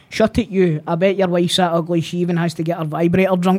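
normal talking voice

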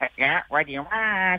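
high-pitched, shy character voice. Retelling turning the face sideways to answer as Luigi: Luigi voice. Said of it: "the voice of Luigi".

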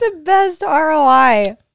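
very loud laughing through words, roi drawn out. Repeating something a cousin said, the speaker cracks up: laughing. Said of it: "why are you laughing at that?".

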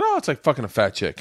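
ordinary talk

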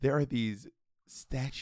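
hushed, conspiratorial whisper. Trying not to let the uncle hear, whispering. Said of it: "I'm whispering like my uncle can't hear".

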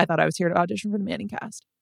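put-on dry, flat, expressionless deadpan delivery. Retelling a commercial line by Jared Goff: deadpan Jared Goff impression. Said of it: "Jared Goff just deadpans".

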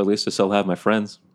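ordinary talk

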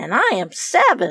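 puffed-up, pleased, proud tone. Rose answers after Kenneth, when the children are called too small: proud. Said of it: "said Rose proudly".

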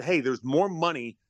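normal talking voice

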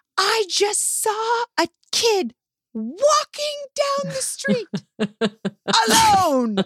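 mock very high, drawn-out, freaked-out woman's voice. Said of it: "she goes".

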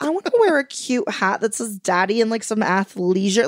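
ordinary talk, nothing marked

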